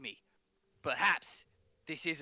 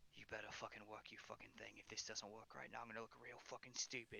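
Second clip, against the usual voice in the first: very low, quiet muttering under the breath; 7 semitones lower, 20 dB quieter than usual. Voicing a commander who hopes his trick works: muttering under his breath. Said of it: "hear him muttering".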